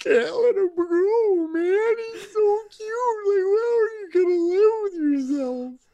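play-acted very high sobbing, bawling, crying voice. Retelling own reaction to the finale parting: imitating own past bawling. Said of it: "bawling my eyes out and going".

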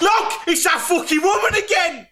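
put-on shrill, full-throated, very high top-of-the-voice yell. Retelling how a man shouted on seeing the woman from Waitrose: retelling a yell. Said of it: "Barry yells at the top of his voice".

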